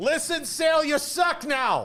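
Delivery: mock thick Boston accent, yelled high.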